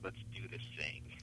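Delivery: hushed, quick conspiratorial tone. Quoting a woman's last words as the speaker left, retelling a conspiratorial tone. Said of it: "in this sort of conspiratorial tone".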